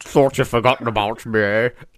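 put-on Scottish accent voice. Answering a call for a Connery impression: Sean Connery impression. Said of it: "nobody has touched Connery".

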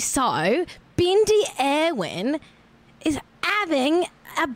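accent slipping into Cockney. Trying an Australian accent, slipping into Cockney: accidental Cockney accent. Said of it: "oh no, that's Cockney".

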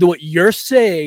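indignant, enunciated delivery. Retelling how they argue when drunk, imitating own indignant enunciated voice. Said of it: "raise my voice and get all".

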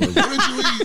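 mock shocked, incredulous radio voice.

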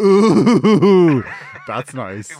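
sarcastic, heavy stress on every single word.

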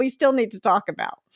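ordinary delivery

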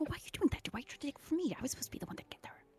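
fast, frantic whispered bickering. Narrating a woman bickering with someone, speaking her line in a frantic whisper. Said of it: "in a whisper level, but you can tell they're frantic".

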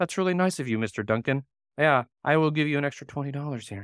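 flat, robotic, machine-like monotone without feeling. Describing how Kevin sounds when giving a compliment, Kevin robot-like voice. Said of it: "he sounds like he's a robot".

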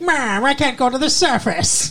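shrill, very high comic villain voice. Retelling what the vampire in the cave says: imitating the vampire villain. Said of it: "he's all like".

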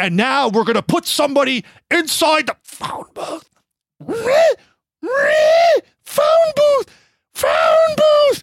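very high-pitched, loud, rising squealing sounds. Acting out what he would say after losing it: retelling high squealing noises. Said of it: "making squealing noises, like high pitched kind of sounds".

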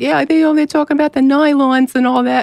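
imitated New York accent. Describing a funny man at a fabric company, the speaker quotes him: classic New York accent. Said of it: "Very classic New York".

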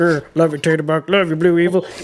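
fastidious put-on character voice. Recapping season 10, voicing Stephanie's lines in a Eugene voice. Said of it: "I'm using the same voice for both because when we finally see Stephanie kind of talk, she does kind of sound like Eugene".

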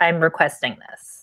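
firm, assertive tone. Showing a client how to ask for a number: firm request. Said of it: "Just firm".

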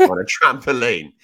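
bursting with laughter, very loud, high. Quoting a watch-along line about a goal, laughing while talking. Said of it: "can't even say it without laughing".

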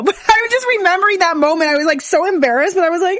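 talking while crying, tearful throughout. Remembering a sad moment at the naturopath's office, crying while talking. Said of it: "I don't even know why I'm crying".

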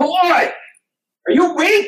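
mock very high, top-of-lungs platoon-sergeant shouting. Retelling how a Marine tried to motivate him, retelling a top-of-lungs shout. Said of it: "At the top of his lungs".

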